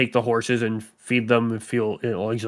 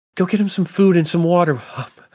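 loud, urgent, pitched-up yell; 7 semitones higher, 6 dB louder than usual. Narrating a character who yells at Lucy; yelling. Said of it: "yells at Lucy".

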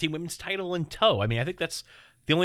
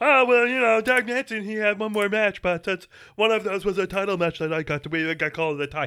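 put-on drunk frog puppet voice; 4 semitones higher, 5 dB louder than usual. Mocking people who tweet excuses about the predictions: drunk Kermit the Frog voice. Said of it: "That sounded like a drunk Kermit the Frog".

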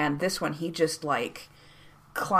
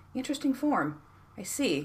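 high, thoughtful, musing, considering tone; 8 semitones higher, 4 dB quieter than usual. A character watches Isabetta try to climb onto the camel alone, thoughtful. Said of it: "leans back with a thoughtful, like, finger to his chin".

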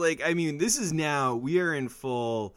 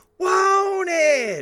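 high, loud falsetto wail, like a rock singer. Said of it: "one word is done in, like, a falsetto voice".

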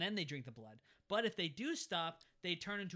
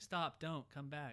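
mild, passive-aggressive pleading tone with no real urgency. Retelling a movie scene, mocking the characters: imitating Willy Wonka-style pleading. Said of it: "They sound like Willy Wonka".

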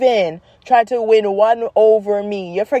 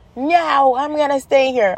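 put-on slow, stretched kid's scream; 4 semitones higher than usual. Retelling a child refusing to leave the park: imitating Emperor screaming. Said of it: "He just screams".

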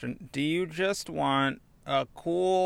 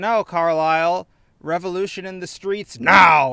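very loud, booming shout; 4 semitones higher, 10 dB louder than usual. Narrating as Jean stirs others to revolution, in Jean's booming voice. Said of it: "there's a big boom in his voice".

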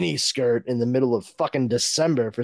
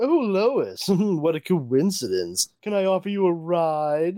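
higher put-on slimy villain voice; 6 semitones higher than usual. Retelling a comic scene, playing Lex Luthor offering a ride: put-on slimy Lex Luthor voice. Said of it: "being slimy as you would imagine Lex Luthor to be".

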